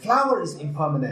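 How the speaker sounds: "flower" stressed, hit with a wide pitch swing.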